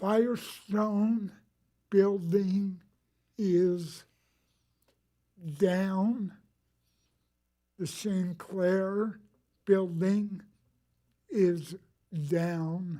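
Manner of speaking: distorted, impeded articulation. Updating the council on buildings coming down, talking funny with screws in mouth. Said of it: "I'm talking funny. They put screws in my mouth".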